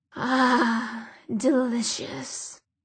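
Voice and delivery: demon voice crackling like fire. Narrator reads the demon Azazel's reply after he gasps: crackling voice. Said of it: "his voice crackled when he spoke".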